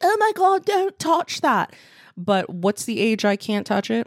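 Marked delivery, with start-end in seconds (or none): 0.0-1.7 put-on British accent at the very top of the range. Imitating people who warn against touching retirement money: put-on british accent. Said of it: "have British accents?".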